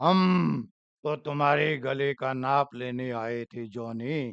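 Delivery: very deep, hushed, low, slow dramatic film-style delivery. Explaining vocal imitation with an example, doing a Raaj Kumar dialogue impression. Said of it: "और वो क्या बोलता था".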